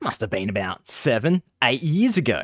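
thick, exaggerated put-on Australian accent. Reading a line again after being asked for more Aussie: exaggerated put-on Australian accent. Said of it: "Aussie it up some more".

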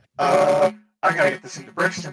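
loud robot voice in full-blown panic. Voicing a robot in a panic attack: panicked robot voice. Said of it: "still in full-blown robot panic attack".

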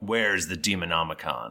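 commanding, authoritative, godlike voice. Running a game, a figure demands the Demonomicon from the players, in a commanding voice. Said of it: "he says to you in this commanding voice".

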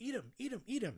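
high, loud, egging-on yell. Reviewing a movie, speaker recalls shouting at the screen: retelling a yell at the screen. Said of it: "I was just yelling at the screen".

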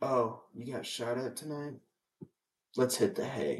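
acted emotionless, never-worried flat delivery. Imitating a husband who shows no emotion: imitating flat emotionless delivery. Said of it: "he was never worried".

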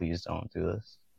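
put-on, very soft, hushed, desperate pleading. Recounting an ordeal while nurses gawked and laughed; retelling desperate begging. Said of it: "like begging".

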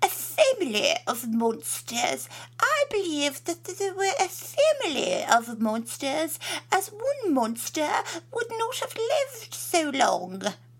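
very plummy posh accent, very high-pitched. Quoting the way they spoke, very posh accent. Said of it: "where do you learn to speak like that?".

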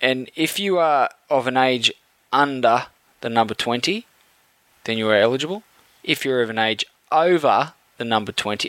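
slow, deliberate, dumbed-down, word by word. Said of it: "Am I talking slow enough?".

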